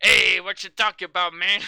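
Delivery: very loud, hammy, bad put-on Mexican accent. Mocking a movie's dubbing of a Mexican character: imitating a bad fake Mexican accent.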